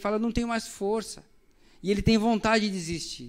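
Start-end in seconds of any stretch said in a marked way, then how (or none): 0.2-1.2 weeping through the words, tearful voice. Retelling a blindfolded player halfway down the field: imitating someone crying. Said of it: "ele começa a chorar".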